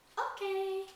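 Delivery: very high, bright, cheery, upbeat chipper tone. Praising during a stay hand-signal lesson: upbeat, chipper tone. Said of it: "then I used kind of an upbeat, chipper tone of voice".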